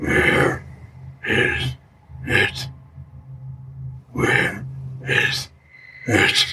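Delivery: thick, hoary ghost voice with broken, halting phrasing. Narrator reads the shipwrecked man's ghost asking a question, in a thick, hoary ghost voice. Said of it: "Talking in a thick, hoary voice".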